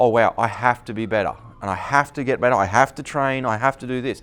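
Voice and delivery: plain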